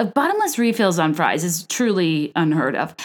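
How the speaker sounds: ordinary talk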